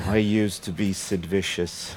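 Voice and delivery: indistinct, half-to-himself mumbling. Retelling what a man said while looking at the monitor, imitating his mumble. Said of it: "he was mumbling".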